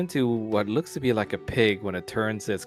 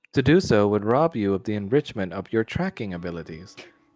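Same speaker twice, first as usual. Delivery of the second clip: synthetic, machine-like voice; 4 dB louder than usual. Voicing an orb answering a visitor's question: AI-like orb voice. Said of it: "kind of A I-like voice".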